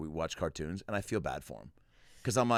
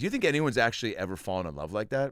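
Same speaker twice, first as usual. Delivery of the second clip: ordinary talk, nothing marked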